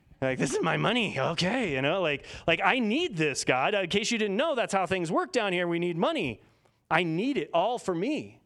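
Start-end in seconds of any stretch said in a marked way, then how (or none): 0.4-3.4 hissing, greedy, possessive little creature voice. Describing a common objection about needing money, Gollum voice. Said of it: "I imagine like Gollum from Lord of the Rings".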